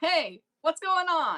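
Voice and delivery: high in-character shout, calling across a distance. Playing a character calling to someone up ahead: in-character shout. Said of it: "I'm gonna shout to the guy ahead of me".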